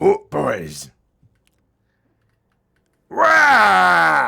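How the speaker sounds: shouted gruff growling orc monster voice. Showing off an orc impression: gruff growling orc voice. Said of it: "That's basically my orc impression".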